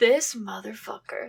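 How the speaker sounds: muttered under breath. Imagining seeing a friend's terrible ex: muttering under breath. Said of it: "just under my breath".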